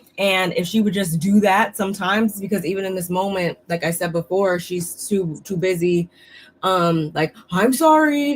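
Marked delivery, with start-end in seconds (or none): 7.5-8.4 high, snide, insincere, sarcastic tone. Imitating how Lisa apologizes to people: imitating a sarcastic apology. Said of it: "Sarcastically, though".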